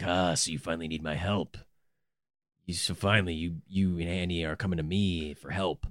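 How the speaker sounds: very low, gruff, gravelly voice. Describing the company's customer service guy on the phone, in a gruff, gravelly voice. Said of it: "this one gruff guy with this gravelly, gross voice".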